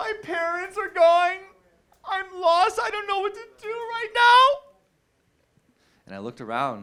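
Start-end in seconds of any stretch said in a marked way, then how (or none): 0.0-4.6 tearful, very high sobbing, pleading tone. Retelling a lost girl who runs up crying: imitating a crying girl. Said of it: "she's crying".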